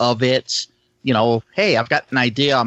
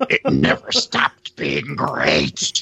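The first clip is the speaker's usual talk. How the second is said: deliberate, very slow put-on character voice, every word drawn out; 10 semitones lower than usual. Answering another player's joke about the group: Gorn voice. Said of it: "you'll have to talk like that through the entire campaign".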